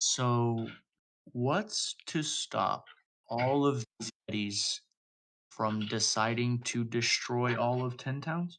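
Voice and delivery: slow, hushed half-whisper under the breath. Voicing a character who leans closer to another and asks: half-whispering under his breath. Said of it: "just sort of whisper, like, under his breath".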